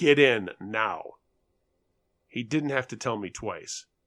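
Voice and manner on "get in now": severe, stern, commanding, no-nonsense voice. A narrator reads a man's order from a car window, in a stern voice. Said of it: "says in a stern voice".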